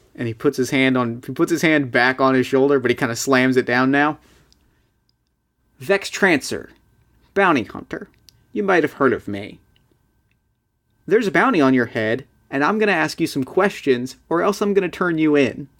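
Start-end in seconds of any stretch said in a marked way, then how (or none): 5.8-15.6 menacing, bullying, intimidating, threatening voice. Playing a bounty hunter threatening a man for information: intimidating bounty hunter. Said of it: "you want to intimidate him".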